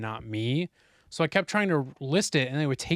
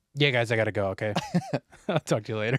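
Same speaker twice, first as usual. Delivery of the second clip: fast, put-on offhand, matter-of-fact deadpan; 3 semitones lower than usual. Speaker retelling how a man said goodbye after an accident; imitating a deadpan delivery. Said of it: "just so like deadpan".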